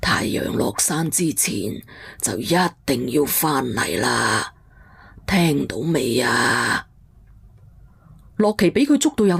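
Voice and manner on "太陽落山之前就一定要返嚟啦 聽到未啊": put-on very low, deep old granny voice. A storyteller voices the old guesthouse granny speaking to a young woman: old granny voice.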